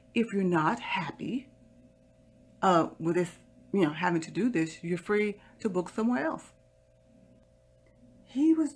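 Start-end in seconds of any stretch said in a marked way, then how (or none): 0.2-6.5 put-on real nice, courteous, professional service voice. Retelling what was said to a guest who would not show ID: imitating own nice professional voice. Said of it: "I said real nicely in my professional voice".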